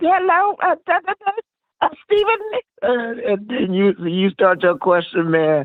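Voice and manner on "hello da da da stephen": very high-pitched woman's voice. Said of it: "she got that real high voice on the interview".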